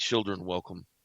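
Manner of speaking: heavy, deep, brooding giant-like voice. A giant character greets the children, deeper brooding voice. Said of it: "with a deeper, brooding voice".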